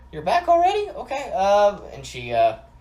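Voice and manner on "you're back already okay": put-on grandma voice, pitched very high. Playing Fiona as she opens the door to Fenric: Granny Leslie impersonation. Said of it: "your best Granny Leslie impersonation".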